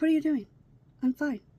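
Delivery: acted calm, unbothered tone. Retelling how a student calmly answered a teacher: imitating someone talking calmly. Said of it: "He's talking to him just like this".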